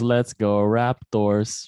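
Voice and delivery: put-on heavy, thick Filipino accent, laid on. Retelling a meme of a fan cheering in an interview: imitating a thick filipino accent. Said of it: "He's got the thickest accent".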